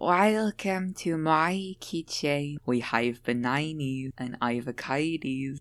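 put-on soft indie-girl style voice, male version. Describing a voice type to the other speaker, imitating the male indie voice. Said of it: "That voice".

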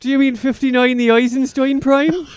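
put-on Irish accent. Presenter listing a number's properties, doing a bit in an Irish brogue. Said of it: "and I like to do this in a brogue".

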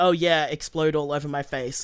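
plain

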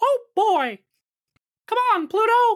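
loud, high-pitched squeaking. Asked by the others to hear it, do a Mickey Mouse impression. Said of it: "I do a pretty good Mickey Mouse impression".

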